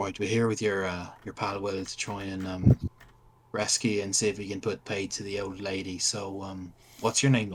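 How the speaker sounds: friendly, secretive, confiding, discreet tone. A player speaks in character to a shackled captive, in a very quiet voice. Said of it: "And in a very quiet voice".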